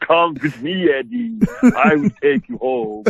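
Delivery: Transylvanian vampire accent, pitched way up. Voicing a vampire speaking to Eddie; Transylvanian vampire accent. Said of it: "it's a pretty good Transylvanian accent".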